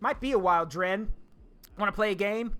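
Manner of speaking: normal talking voice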